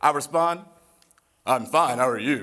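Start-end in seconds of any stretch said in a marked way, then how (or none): 1.5-2.4 deep, put-on macho-man voice, done for fun. Retelling meeting a woman outside a concert hall, the speaker answers her in a put-on macho voice. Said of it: "That's my macho voice".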